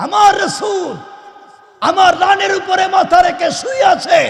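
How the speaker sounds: high, loud, awed shout.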